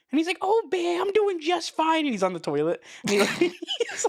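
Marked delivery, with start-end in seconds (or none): 0.4-2.0 really high, raspy voice. Retelling a kids' show scene, answering the bear, in a high raspy Tutter voice. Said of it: "his voice is just really high and it's like raspy".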